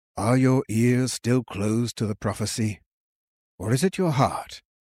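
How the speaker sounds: gentle, soft manner. The king answers a confused monk about the prophecy, gently. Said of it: "the king said gently".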